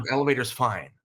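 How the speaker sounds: plain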